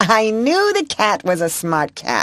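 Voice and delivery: voice lifted up high. Reading a character's line aloud in a story: high voice. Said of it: "she said in a high voice".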